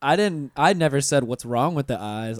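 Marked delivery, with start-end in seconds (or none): none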